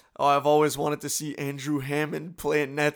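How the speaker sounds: dry, sarcastic, meaning the opposite. Retelling a friend's remark at a hockey game: imitating Julien's sarcastic tone.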